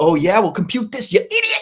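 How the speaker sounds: unhinged, very high-pitched, loud furious rage. Retelling Ben Stiller confronting an old man over theater seats; imitating Ben Stiller's psycho rage. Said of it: "he turns into this psycho".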